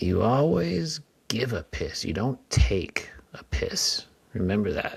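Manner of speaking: play-acted, dry, matter-of-fact, dead serious delivery. Retelling what a stranger at a bar urinal said: imitating a deadpan stranger. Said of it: "dead-faced and says".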